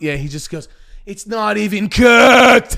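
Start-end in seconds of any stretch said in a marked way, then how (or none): 1.1-2.8 mock enraged, very loud, drawn-out furious yell. Retelling Gordon Ramsay's reaction to food: imitating Gordon Ramsay angry. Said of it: "He gets so mad".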